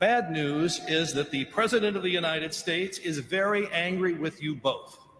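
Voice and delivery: ordinary talk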